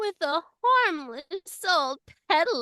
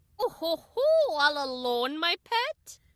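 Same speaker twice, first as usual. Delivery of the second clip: put-on wicked fairy-tale witch voice. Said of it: "And then a witch appears".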